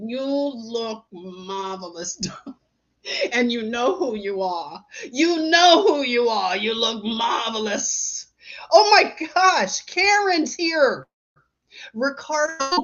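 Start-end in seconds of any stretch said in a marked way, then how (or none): 0.0-8.3 put-on tearful voice, "look" stretched out long. Recalling a comedian's impression of a TV figure: Billy Crystal's impression of Ricardo. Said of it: "He would do an impression of that guy".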